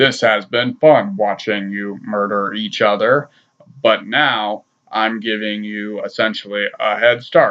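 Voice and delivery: flat, robotic machine translator voice. Speaker recounts the Predator speaking through a translator: robotic Predator voice. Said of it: "this like robot voice that's supposed to be the Predator".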